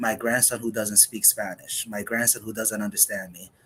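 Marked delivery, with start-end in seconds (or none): none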